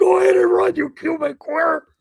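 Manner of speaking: shrill, high, loud yell through laughter. Retelling what he shouted while running away: imitating someone yelling while laughing. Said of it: "he's laughing, yelling".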